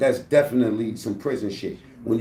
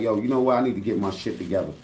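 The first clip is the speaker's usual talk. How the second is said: acted pleading tone, lower pitch; 4 semitones lower than usual. Speaker recounts a scene from a show, one man speaking to another: retelling a plea. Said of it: "really coming to him pleading like".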